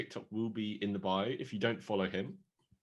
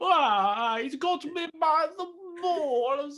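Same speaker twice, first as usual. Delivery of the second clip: very high, loud, awful voice, "Ah" drawn out; 7 dB louder than usual. Showing the others a Jared Leto impression: Jared Leto impression. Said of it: "my Jared Leto impression is".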